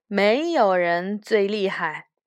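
ordinary delivery

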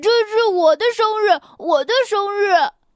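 furious, high, angry shout. Reading a story aloud, a character yells while everyone watches two others with a cart: angry shout. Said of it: "道格拉斯生气的喊道".

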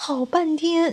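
plain reading voice

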